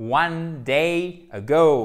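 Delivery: slow, loud, stress on "go" in "ago". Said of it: "Faut vraiment faire cette diphtongue ici".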